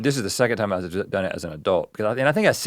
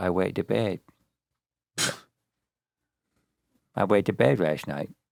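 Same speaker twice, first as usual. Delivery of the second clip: childlike put-on baby voice; 3 semitones lower, 4 dB quieter than usual. Retelling the first thing said to her on waking up, in a baby voice. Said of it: "I think I said it in a baby voice".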